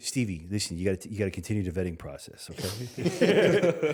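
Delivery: put-on Long Island New York accent. Son repeats his dad's advice about a new girlfriend, imitating dad's Long Island accent. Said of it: "you got to say in a Long Island accent".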